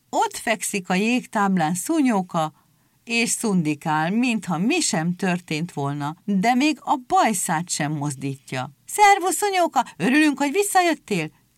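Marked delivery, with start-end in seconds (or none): 8.8-11.3 very high, rushed, overlapping yells. Seals greet a friend back on the ice, shouting over each other. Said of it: "Kiabáltak a fókák egymás szavába vágva".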